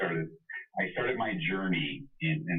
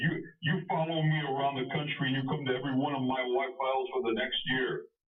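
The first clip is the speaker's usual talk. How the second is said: put-on pitched-up Brooklyn accent; 6 semitones higher than usual. Retelling a tall man's reply on how to get his knowledge: brooklyn accent. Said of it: "said in his Brooklyn accent".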